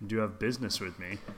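suggestive delivery, laid on suggestively. Repeating another player's quote back to tease them: imitating a propositioning tone. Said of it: "that sounds like you proper, like, propositioning".

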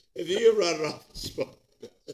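very loud, high laughing delivery, cracking up. Repeating a phrase to show it can't be said straight: laughing while talking. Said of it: "you can't say that without laughing".

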